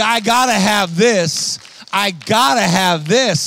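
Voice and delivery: very slow, drawn-out, sobbing bawl. Retelling her words in the bathroom: imitating her bawling. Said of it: "she's bawling her eyeballs out".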